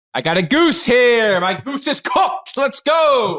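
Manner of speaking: put-on high, slow, laid-on New York accent. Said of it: "Is that a New York accent?".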